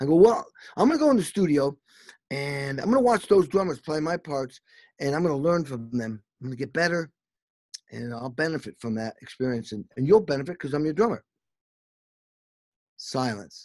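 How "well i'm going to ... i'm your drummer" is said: ordinary delivery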